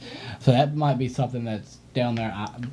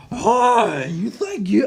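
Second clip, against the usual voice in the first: shrill put-on British accent, very high, drawn out; 10 semitones higher, 6 dB louder than usual. Imitating a game orc's voice: screechy british accent. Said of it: "the screechy, like, British accent".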